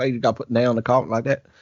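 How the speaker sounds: exaggerated high Southern accent. Imitating a YouTube tutorial guy with a crazy accent: Southern accent. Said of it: "some Southern guy with a crazy accent".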